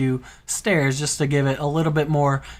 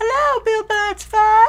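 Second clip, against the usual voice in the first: put-on character voice, much higher, louder; 4 dB louder than usual. Greeting BuildMineSurvive in the game, in a high-pitched Pigman voice. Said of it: "When did you get such a high voice?".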